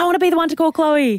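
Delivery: excited, giddy nurse voice.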